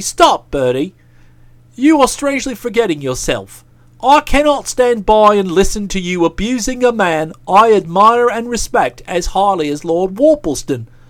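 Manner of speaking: ordinary talk, nothing marked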